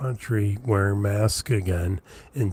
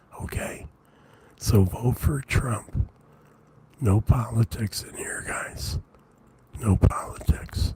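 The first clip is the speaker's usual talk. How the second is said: hushed, soft conspiratorial stage whisper. Speaker tells the audience he is whispering like the president does, whispering. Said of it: "I'm whispering".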